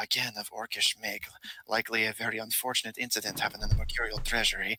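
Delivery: muttering quietly to himself. Voicing a character examining gems one by one, muttering to himself. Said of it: "you can hear him start muttering to himself".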